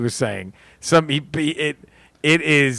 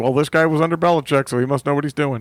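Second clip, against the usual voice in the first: normal talking voice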